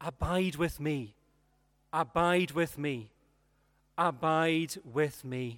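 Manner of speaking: tender, gentle, slow repeated refrain. Telling Light's story, the speaker repeats his friend's words, retelling a gentle voice. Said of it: "in this gentle voice".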